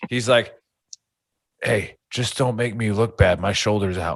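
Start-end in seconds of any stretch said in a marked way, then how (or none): 1.6-4.2 hushed, confidential stage whisper. Retelling what Joe said after being put down in combatives: imitating Joe half-whispering. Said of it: "he whispered into my ear".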